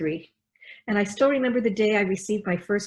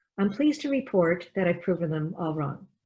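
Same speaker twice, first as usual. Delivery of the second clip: normal talking voice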